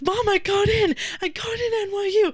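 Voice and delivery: very high, shrill, tearful, sobbing yell. Retelling telling Mom the news over the phone, retelling a sobbing yell. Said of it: "And I'm yelling like".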